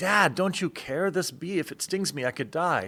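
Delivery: acted-out high, frantic, panicking boy voice. Retelling a story of a boy and a bee: imitating a panicked boy. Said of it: "The boy's panicking".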